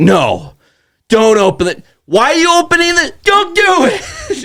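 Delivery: stretched, very high shout. Retelling watching a scary movie, imitating yelling at the tv. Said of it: "I'm just yelling at the T V the whole time".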